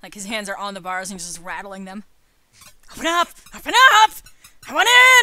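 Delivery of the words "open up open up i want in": shrill, very loud, high-pitched demanding shout. A character rattles the gate bars, waiting to be let in, loud shouting. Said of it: "I think I've been loud enough".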